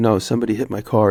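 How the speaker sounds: ordinary talk, nothing marked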